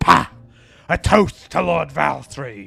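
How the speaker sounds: very deep put-on voice. Voicing a character in the story: very deep voice. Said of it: "I need to stop doing the freaking deep voices".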